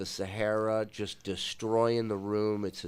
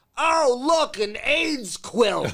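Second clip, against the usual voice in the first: squawked slowly, shrill and loud; 9 dB louder than usual. Retelling a comedian's joke about a baby quilt: Gilbert Gottfried parrot voice. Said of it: "He did it in the parrot voice".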